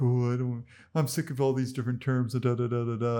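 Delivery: dopey, dim-witted voice. Mimicking people weary of all the different terms: stupid person voice. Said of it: "I'm using my stupid person voice".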